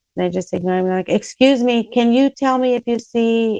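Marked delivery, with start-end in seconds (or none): 1.1-3.6 imitated raised voice, getting louder and higher. Retelling asking a stranger for help: retelling getting louder. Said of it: "and I'm getting louder".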